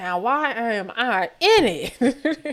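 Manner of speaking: very slow, deliberate, each word drawn out. Imitating what someone is probably saying, in a Nene voice. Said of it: "in her Nene voice".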